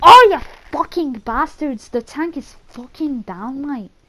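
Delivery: put-on loud Scottish accent. Imagining Frank Woods's dialogue aloud, deliver his line in a Scottish accent. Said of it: "Why did I do a Scottish accent?".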